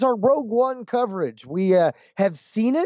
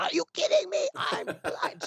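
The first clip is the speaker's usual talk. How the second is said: put-on really high-pitched, piping young girl's voice; 10 semitones higher, 8 dB quieter than usual. Imitating a girl who keeps repeating a movie line: imitating a girl's high-pitched voice. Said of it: "She does it really high pitched".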